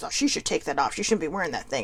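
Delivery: put-on under-breath mutter. Speaker retells a stranger criticizing a jersey; imitating a mutter under breath. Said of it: "he says kind of under his breath".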